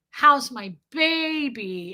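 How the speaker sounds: mock slimy, over-the-top syrupy, drawn-out baby voice. Retelling how she greeted the speaker's son: imitating an over-the-top syrupy voice. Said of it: "slimy and, like, syrupy and weird".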